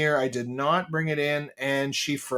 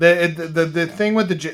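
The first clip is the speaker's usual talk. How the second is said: stumbling start, stuttering and repeating "the"; 2 semitones higher, 4 dB louder than usual. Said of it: "I'm stuttering".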